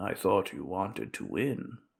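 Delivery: soft, very hoarse, raspy dove voice. A stock dove lands and speaks to the man in a very raspy voice. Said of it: "in a very raspy voice".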